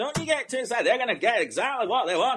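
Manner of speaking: put-on Yorkshire accent. Repeating back to Jay what Jay said, in a Yorkshire accent imitating Jay. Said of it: "I'm doing that in a Yorkshire accent".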